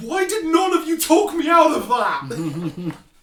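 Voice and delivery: animated, loud, swooping shouting outburst. A player speaking in character as his paladin to the group, yelling. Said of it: "he basically just yells".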